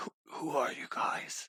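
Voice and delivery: badly hoarse, rasping, worn-out voice. Voicing a character who has just chugged a drink, asking the group: very hoarse voice. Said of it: "grossly hoarse as well".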